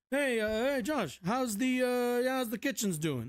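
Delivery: poorly done put-on New York guy voice, a bit high. Imitating Joe Biden calling to ask about work: attempted Joe Biden voice. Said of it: "I feel like I'm doing New York, some New York guy".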